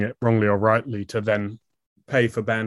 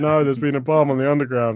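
mock crying, tearful and upset voice; 4 semitones higher than usual. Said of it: "She was like".

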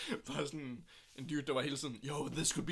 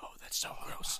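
mock caring boyfriend voice, quieter. Retelling a boyfriend roleplay video for the others: imitating a boyfriend roleplay video. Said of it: "og så er han sådan".

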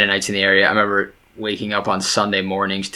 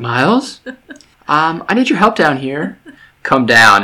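put-on very calm, sing-song delivery; 7 semitones higher, 6 dB louder than usual. Replaying how the other speaker called miles downstairs for help: imitating a very calm request. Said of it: "you said it in the calmest way".

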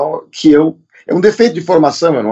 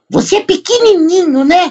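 put-on very high-pitched little old woman voice. Retelling what an elderly fan said during a selfie: imitating an old lady's voice. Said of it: "gostei da voz de velha".

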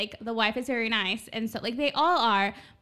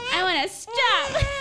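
put-on childish defiant whine, higher; 9 semitones higher than usual. Retelling own past reply to a gym trainer, imitating own defiant whine. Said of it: "defiant where I'm like".

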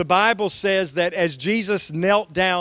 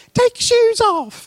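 put-on tiny, squeaky toddler voice, raised very high; 6 dB louder than usual. Recalling a two-year-old greeting guests at their house, Tommy's little squeaky voice. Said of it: "Tommy had this little squeaky voice and he'd say".

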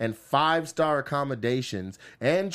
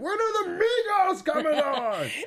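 play-acted, very high, slow, drawn-out scream. Describing a meme of a man lost on a deserted island: imitating Tom Hanks screaming. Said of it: "but he's screaming".

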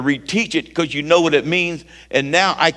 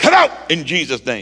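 put-on forceful, bold, commanding voice with full authority. Recounting a man growling at a Bible study, retelling a bold command. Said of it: "I was the Kevin Lil of the bold like I am right now".

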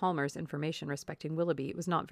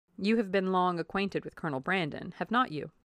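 ordinary delivery, nothing marked

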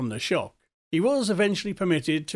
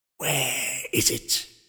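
low, broken, cracking voice; 3 semitones lower than usual. A figure enters the room and asks where it is, in a low cracked voice. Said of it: "A low cracked voice said".

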